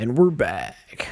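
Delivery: exaggerated, obnoxious radio DJ announcer voice. Announcing the show's return with an obnoxious radio-announcer voice. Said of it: "I'm doing the "and we're back" in like an obnoxious radio voice".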